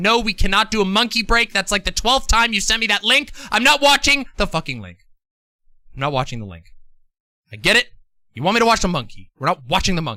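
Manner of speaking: fed-up, furious, angry, swooping rant. Refusing chat's repeated requests to watch a monkey link: angry. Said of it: "I am so angry".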